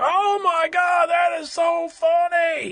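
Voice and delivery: put-on very high, slow, drawn-out, loud gushing. Retelling what someone behind them said during the movie: imitating a loud moviegoer. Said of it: "very loud throughout the, the movie".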